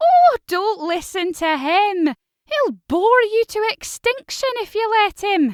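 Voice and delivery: haughty, lofty voice, high and loud. Narrator reading a stuffed giraffe cutting off a worm to Astrid; Geraldine the talking giraffe voice. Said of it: "[name] looked up into the face of the giraffe, who appeared to be speaking to her. / looking up at a huge stuffed giraffe. / "She loves to make out like she's queen of the planet with her seven millio".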